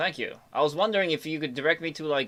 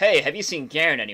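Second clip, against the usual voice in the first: half-mocking, knowing, semi-sarcastic tone; 3 dB louder than usual. Asking another character whether they have seen someone: semi-sarcastic. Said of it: "I sort of semi-sarcastically go".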